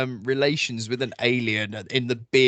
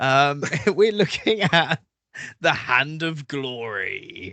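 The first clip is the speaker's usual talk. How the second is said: laughing, giggling through the words; 3 semitones higher than usual. Host opening the Buffoons Mystery Investigators episode, giggling. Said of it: "sorry, I'm already giggling".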